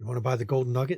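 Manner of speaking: soft half-whisper close to the ear. Narrating a game scene, a figure leans in to a player: half-whispering in your ear. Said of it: "a voice whispers in your ear".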